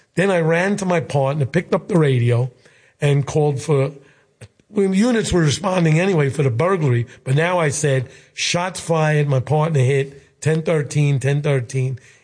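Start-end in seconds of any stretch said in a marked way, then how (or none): none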